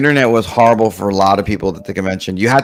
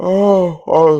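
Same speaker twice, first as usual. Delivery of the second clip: high, stretched voice talking through a big yawn; 8 semitones higher than usual. Speaker apologizes after a long night last night; yawning. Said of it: "so sorry. I'm yawning".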